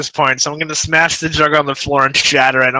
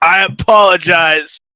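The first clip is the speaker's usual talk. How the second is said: put-on drunk character voice, tipsy slurring; 2 semitones higher than usual. Playing a staggering tipsy character apologizing to Zelek: drunk character voice. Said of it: "drunkenly reach out the hand ... and be like".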